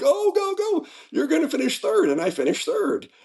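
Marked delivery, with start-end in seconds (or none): 0.0-2.1 high-pitched mock screaming yell. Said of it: "They were screaming".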